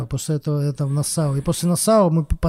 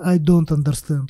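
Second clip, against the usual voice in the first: deliberate put-on Russian accent. Turning to a man who keeps talking at him, replying in a deliberate Russian accent. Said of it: "прям специально сказал с русским акцентом".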